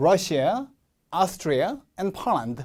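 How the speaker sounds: short breaks between Russia, Austria, Poland, each set apart. Reading lesson on phrasing, short pauses between Russia, Austria, Poland. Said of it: "사이사이 끊어 읽기만 좀 잘해주시고요... 이런 식으로요".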